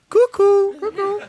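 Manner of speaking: mock chirpy, high sing-song voice.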